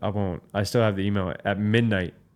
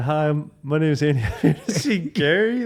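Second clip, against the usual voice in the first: mock timid, shy, nervous voice; 7 semitones higher, 3 dB louder than usual. Retelling day one at a new office, speaker imitates their shy nervous self. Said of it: "like so nervous".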